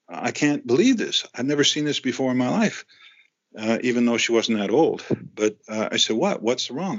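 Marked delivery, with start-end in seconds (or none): 0.2-2.9 put-on nonplussed, bewildered, disbelieving exclamation. Retelling what the woman said looking at the bill, imitating nonplussed disbelief. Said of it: "and she's nonplussed".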